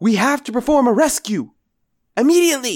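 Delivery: high, loud, full-volume top-of-lungs yell. Anders bursts into the bar calling for a rescue: yelling at the top of his lungs. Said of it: "yell at the top of his lungs".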